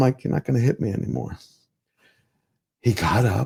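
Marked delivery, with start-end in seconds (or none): 0.2-1.4 tearful, crying, breathy whispered words. Retelling own words to a dad while pointing a rifle: retelling own tearful words. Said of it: "but I'm crying now".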